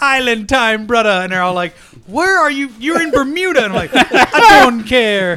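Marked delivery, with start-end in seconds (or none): 0.0-1.1 put-on Jamaican accent. On a podcast, the speaker retells their own joke in a put-on jamaican accent. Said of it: "I was putting on the Jamaican accent".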